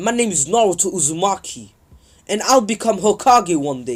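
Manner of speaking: ordinary talk, nothing marked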